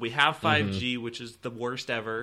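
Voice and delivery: ordinary talk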